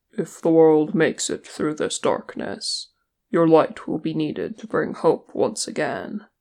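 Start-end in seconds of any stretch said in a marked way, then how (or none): none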